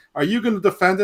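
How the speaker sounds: acted, very high, shouted jeering yell. Recounting a GIF of a fan yelling at a man with a belt; retelling a yell. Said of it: "they're yelling".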